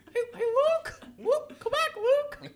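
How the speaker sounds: very high, squeaky cartoon-mouse voice.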